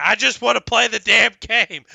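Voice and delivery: very loud, raw, rough, exasperated yell. Retelling yelling at a game full of pop-ups: imitating own yelling. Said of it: "I finally yelled at the thing".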